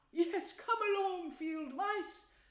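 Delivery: excited, high-pitched call. Narrator reading the mole inviting the field mice in: eager cry. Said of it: "cried the mole eagerly".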